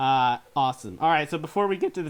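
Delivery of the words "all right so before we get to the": voice breaking, cracking mid-phrase. Counting down top board games with another speaker, voice cracking. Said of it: "ooh, my voice just cracked".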